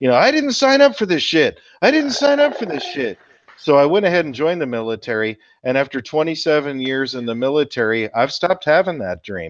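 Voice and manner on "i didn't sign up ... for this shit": mock scream, very high and swooping. Retelling a recurring boot camp dream, retelling a dream scream. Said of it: "I'd be screaming".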